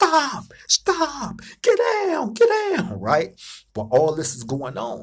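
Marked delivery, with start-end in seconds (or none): 0.0-3.0 mock very high, drawn-out, top-of-the-lungs guard scream. Retelling a fight seen from a cell, the dude in the tower: imitating a guard screaming. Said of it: "he's screaming at the top of his lungs".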